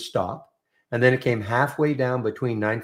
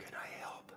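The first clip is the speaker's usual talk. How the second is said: whispered, quiet. Offering quietly to help answer the question, whispering. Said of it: "What are you whispering".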